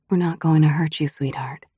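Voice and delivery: gentle, soothing, soft, quick cooing. A woman coaxes the narrator to come out and talk, cooing quietly. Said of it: "she coos".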